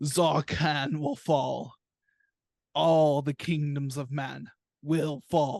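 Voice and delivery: huge, booming, thundering dragon voice. Narrating the scene as the dragon yells over the burning town: the Razor's booming dragon voice. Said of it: "just his booming voice of this dragon".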